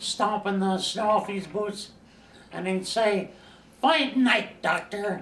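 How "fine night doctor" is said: put-on speech in a Scandinavian accent. Retelling a night visitor's usual greeting: imitating Newt's Scandinavian accent. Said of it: "Newt would come in with his Scandinavian accent".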